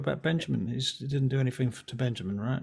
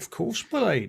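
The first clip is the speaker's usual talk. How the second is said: mock posh voice, higher; 6 semitones higher than usual. Joking about one day doing the same for the other speaker: mock toffee servant voice. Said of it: "One day you'll do that with me".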